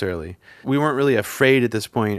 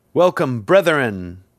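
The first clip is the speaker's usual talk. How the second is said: put-on booming, hall-filling ceremonial delivery; 3 semitones higher, 4 dB louder than usual. Recounting a man at a podium addressing the room, retelling a booming greeting. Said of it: "like with a booming voice over this room".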